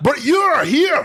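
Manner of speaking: put-on harsh Scottish accent. Repeating a movie line after another speaker: hard, mean scottish accent. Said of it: "a hard, mean Scottish".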